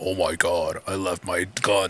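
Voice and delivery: very deep, hushed, soft voice. Friend mocks Optimus for leaving his guns in a trailer; deep Optimus voice. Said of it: "I can't even imagine his deep voice".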